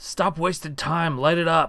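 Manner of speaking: urgent voice, called out. Narrating a fight, voicing Dust Devil shouting. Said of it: "Dust Devil shouts".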